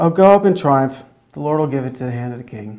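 play-acted, hollow, disbelieving, unconvincing sarcastic tone. Acting out a prophet's line to the king: acting out a sarcastic line. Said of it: "He says it utterly not believing a word".

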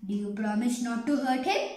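plain reading voice

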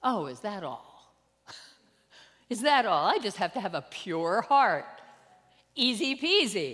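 openly sarcastic, breezy, loud delivery with swooping pitch. Speaker reacting to a Bible verse they just quoted, sarcastic. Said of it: "I'm being like sarcastic".

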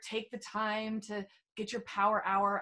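ordinary talk

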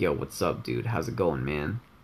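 monotone voice. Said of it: "he tries his best to just stay as monotone as possible".

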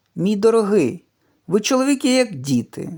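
high-pitched exclaiming. Narrator reads the dancer's reply to Derek, exclaiming. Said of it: "вигукнула танцівниця".

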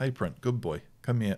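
relaxed, easy, dead calm, soft tone. Showing how to approach a pup at the kennel: calm relaxed tone. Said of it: "if I walk out in this sort of tone".

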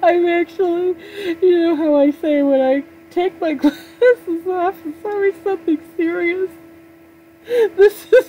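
very high, weepy, tearful crying voice. After thanking a neighbor for the internet, speaking to viewers, crying happy tears. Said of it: "I'm crying, but they're happy tears".

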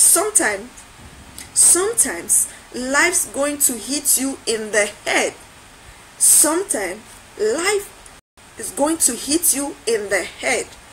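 ordinary talk, nothing marked

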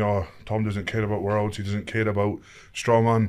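plain

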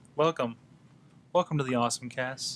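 hushed, gentle, low-key public-radio host voice. Opening the show in the style of the NPR opening: NPR opening voice. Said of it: "We're gonna do the N P R opening".

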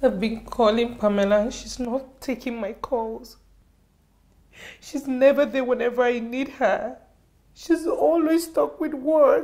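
speaking while crying. Speaker tells a friend that Pamela never takes her calls; crying. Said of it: "Is that why you are crying?".

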